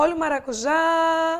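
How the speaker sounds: street-seller cry, já drawn out long. Teacher finding the stressed syllable, calling like a vendor: vendor call stretching final já. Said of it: "Quer que eu venda? ... Quem é a tônica? Já. ... a tônica é aquela que você estica".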